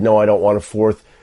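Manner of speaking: plain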